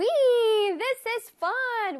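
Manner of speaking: put-on high-pitched, thrilled, excited child's cheer.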